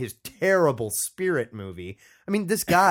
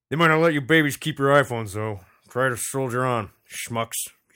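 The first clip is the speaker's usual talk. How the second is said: bad put-on old man voice impression. After admitting he can't do it, the speaker tries a bad Wilford Brimley impression. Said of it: "Wilford Brimley".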